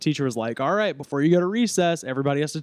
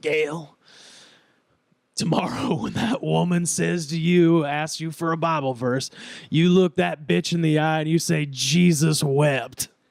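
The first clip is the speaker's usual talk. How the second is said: put-on rasping, raspy old woman's heavy-smoker voice. Retelling what her grandmother told Gail, raspy smoker's voice. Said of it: "Had this raspy ass voice".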